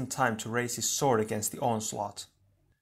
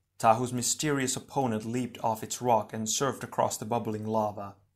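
plain reading voice

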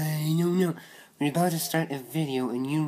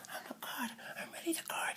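eerie, creepy, hushed whisper; 10 semitones higher, 16 dB quieter than usual. Playing the guard in a toy skit, insisting on the role: creepy voice. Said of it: "That sounded creepy, man".

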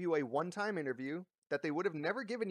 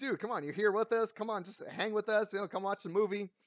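acted, pestering, coaxing nagging complaint; 4 semitones higher than usual. Retelling complaining at a friend who skipped the movie: imitating complaining at a friend. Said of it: "we were bitching at him, like".

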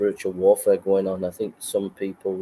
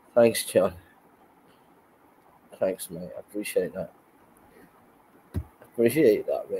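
choked up, nearly crying. Thanking someone named John for their kindness, nearly crying. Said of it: "I'm nearly crying, mate".

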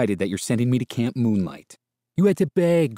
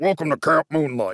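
rough, gruff voice; 4 semitones higher than usual. A narrator reading a story voices an unseen speaker greeting the family; gruff voice. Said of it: "said a gruff voice".

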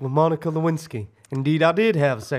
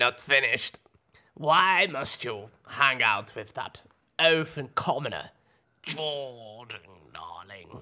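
put-on granny voice, lower pitch; 4 semitones lower, 6 dB quieter than usual. Presenter on a show doing the Etiquette Granny bit: Etiquette Granny voice. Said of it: "Etiquette Granny".

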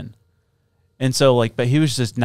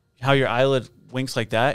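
ordinary delivery

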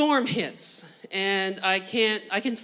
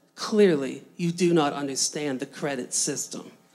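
mock deadpan delivery, much lower pitch; 6 semitones lower than usual. Retelling a woman's reply about flight prices, retelling a deadpan reply. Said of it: "With a deadpan voice".

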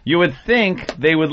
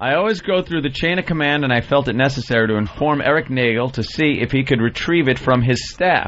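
ordinary delivery

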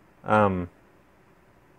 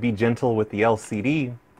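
ordinary talk, nothing marked

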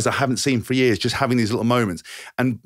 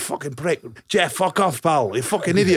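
put-on furious, high-pitched swearing rant in a Scottish accent; 5 semitones higher than usual. Retelling the kit man's reply to a prank call, imitating Malcolm, angry Scottish. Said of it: "angry Scottish guy".

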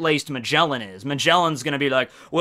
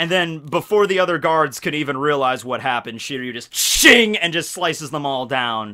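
plain

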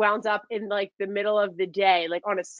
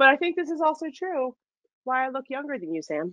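lighthearted, playful teasing, pitched up; 5 semitones higher than usual. Speaker talking to a companion, teasing. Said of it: "I am teasing you".

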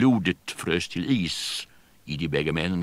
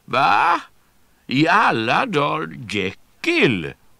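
swooping, very high, very slow, loud exclaimed call; 9 semitones higher, 5 dB louder than usual. Ottosson, seeing Jekyll at a window, calls out to him. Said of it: "ropade Ottosson".

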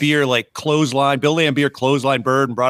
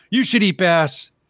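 imitated yelling, higher pitch; 5 semitones higher than usual. Retelling ribbing a podcast host on his show: retelling a yell. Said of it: "me and Paul yelling".

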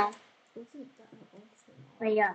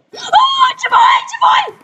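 high, loud scream at top volume. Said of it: "Stop screaming".

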